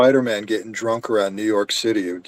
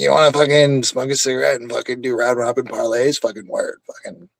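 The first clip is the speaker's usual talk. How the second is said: harsh, grating, abrasive, gruff put-on tough-guy voice; 3 semitones higher than usual. Showing how to get the Muppet mouth going, abrasive put-on voice. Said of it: "You just get the abrasive voice behind it".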